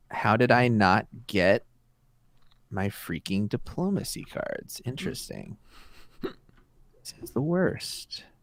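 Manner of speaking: sad, downcast. Playing a card game, the player finds a card type missing, sounding sad. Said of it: "That sounded so sad".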